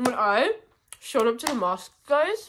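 speaking while chewing, mouth full of food. Vlogging while eating on the floor, talking with mouth full. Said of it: "so rude to talk with food in my mouth".

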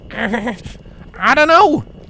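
forced through gritted teeth, strained, very high, loud. Narrator reads Applejack's strained admission to Twilight, through clenched teeth. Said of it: "Applejack admitted through clenched teeth".

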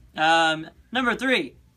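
loud yelling. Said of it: "Why are you yelling?".

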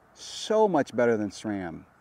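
swooping, tongue-in-cheek sarcastic delivery. Describing a bike's cassette and comparing it with sram: sarcastic tone. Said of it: "Can you tell my sarcasm there?".

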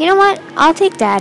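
plain reading voice

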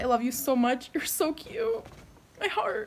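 tearful voice. Reading a friend's note aloud on her vlog, crying. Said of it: "I'm crying".

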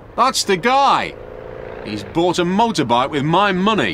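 eager, excited, high-pitched shout. Frank sees the man on the motorbike drive up to the police car, shouting excitedly. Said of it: "shouted Frank excitedly".

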